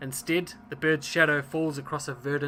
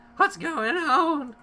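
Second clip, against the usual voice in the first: put-on scared child voice, much higher, louder; 13 semitones higher than usual. Narrating a game scene, voicing scared orphan children stepping out, scared orphan child voice. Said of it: "That's my orphan voice".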